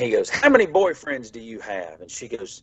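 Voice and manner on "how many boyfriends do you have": distinctive voice with pitch swooping up and down. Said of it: "he had a very distinct voice".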